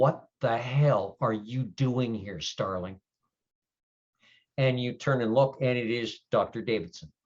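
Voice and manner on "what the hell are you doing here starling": spoken close, pressed right into the ear. Narrator voices someone gripping the listener's arm, speaking quietly in their ear. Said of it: "a voice quietly says in your ear".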